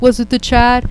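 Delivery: acted, high, mournful and saddest-sounding tone. Retelling how a man asked, with the saddest face: imitating a sad question. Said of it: "the saddest face, he goes".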